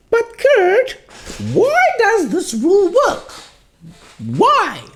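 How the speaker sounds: very high, put-on curious student voice.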